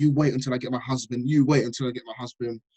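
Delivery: normal talking voice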